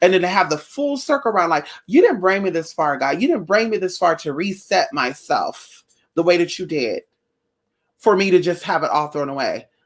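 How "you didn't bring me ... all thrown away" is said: ordinary talk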